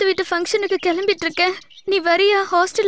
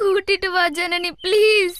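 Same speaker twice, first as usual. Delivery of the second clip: crying, tearful pleading voice. Pleading again with a sister to bring their father home: crying while pleading. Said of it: "நீ அழுது உனக்கு ஏதாவது ஆயிட போகுது".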